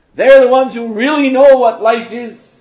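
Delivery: high, loud shout. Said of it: "she shouted out".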